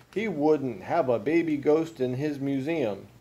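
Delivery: ordinary delivery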